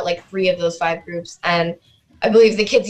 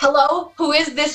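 high, screamed call-out; 8 semitones higher than usual. Retelling hearing whistling coming at her while putting costumes on, retelling a scream. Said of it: "I'm screaming".

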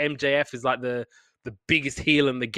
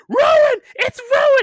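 very high, very loud, insistent scream; 9 dB louder than usual. Retelling how Jericho kept screaming during a match: imitating Jericho screaming. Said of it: "he just kept screaming".

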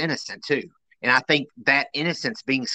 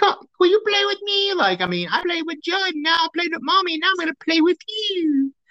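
put-on very high, tiny, eerie little child's voice. Quoting Gage while talking about scary kids, Gage's little voice. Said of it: "that little voice".

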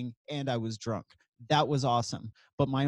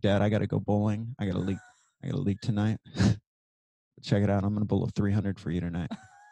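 put-on whisper, lower; 5 semitones lower than usual. Retelling his dying father's bedside, the speaker repeats what he told him: retelling a whisper. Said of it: "I whisper to him".

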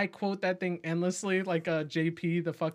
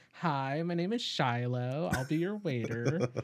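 effeminate voice, pitched much lower; 3 semitones lower than usual. Recalling a movie scene with David Spade as the waiter: David Spade's effeminate waiter voice. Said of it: "got like this effeminate like kind of like voice".

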